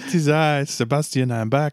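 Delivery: exaggerated, outrageous French accent, pitched high. Returning guest greeting the hosts, in an outrageous french accent. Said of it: "my outrageous French accent has returned".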